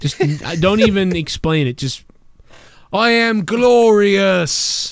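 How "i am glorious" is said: put-on English accent, pitched up, "glorious" stretched out. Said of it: "give Bobby Roode an English accent".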